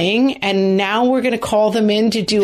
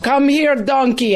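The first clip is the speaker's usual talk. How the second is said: clumsy, weak, bad put-on Austrian accent; 4 semitones higher than usual. Describing a man who feeds animals at his table, quoting him in a bad austrian accent. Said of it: "He's got the Austrian accent and he's like".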